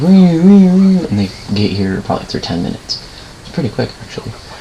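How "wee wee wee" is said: high, loud wailing siren imitation. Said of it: "And it goes".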